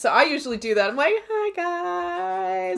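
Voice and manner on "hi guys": squeaky, very high, creaky cutesy voice, stretched words. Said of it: "I'm all, like, cutesy".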